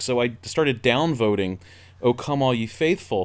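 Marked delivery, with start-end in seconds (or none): none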